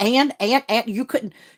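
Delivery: mock heated angry rant, stammering over "and". Retelling how she scolded her son on the phone: imitating her own angry rant. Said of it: "I was going to town".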